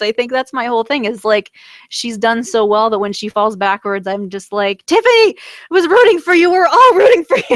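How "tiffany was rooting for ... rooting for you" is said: very high-pitched, shrill screaming. Discussing a character who falls backwards, the speaker is screaming into the microphone. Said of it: "I'm screaming into the microphone".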